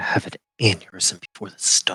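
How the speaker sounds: muttering under breath. Voicing a character grumbling as another leaves: muttering under breath.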